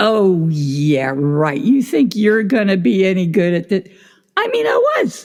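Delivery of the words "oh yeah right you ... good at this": nagging, insistent, doubting voice. Retelling how the inner critic grew more insistent: imitating insistent inner critic. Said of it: "And I'd hear this".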